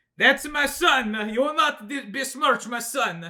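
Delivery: very high, loud, bad fake Italian accent. Acting out the other family's reply in a story, in a bad Italian accent. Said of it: "I can't do like an Italian accent".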